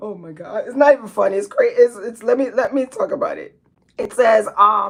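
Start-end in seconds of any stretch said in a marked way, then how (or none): 0.0-3.6 words spoken through laughter. Trying to read a viewer's comment aloud: laughing while talking. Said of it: "I gotta stop the laughing".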